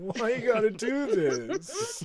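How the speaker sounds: sobbing, very slow and pitched way up. Retelling a scene where Josh sits alone: imitating Josh crying. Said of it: "crying and just being like".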